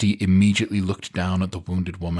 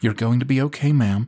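calm, reassuring, gentle, soothing coo; 4 semitones higher than usual. Betty comforts a moaning patient while pressing gauze on her arm, cooing gently. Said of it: "she cooed gently".

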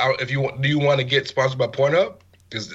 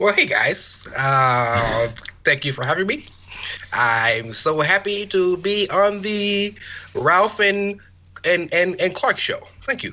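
impersonated man's voice, pitched higher; 4 semitones higher than usual.

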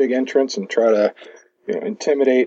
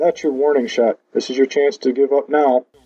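voice projected, calling out; 2 semitones higher than usual. Yelling at an enemy after throwing a brick: yelling. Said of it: "I yell".

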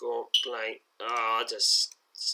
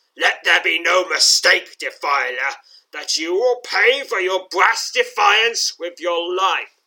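very loud, high-pitched, sinister undead snarl; 7 semitones higher, 9 dB louder than usual. Narrator voices an undead creature drawing a long sword on a defiler, snarling. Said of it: "snarls the undead creature".

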